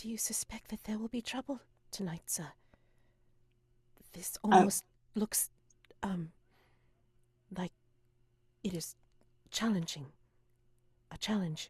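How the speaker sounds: hushed whispering voice. Voicing Nora sidling up behind someone, asking in a whisper. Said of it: "kind of ask in a whisper".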